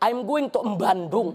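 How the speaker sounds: put-on slow, Javanese-accented English. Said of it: "ada yang baca begini".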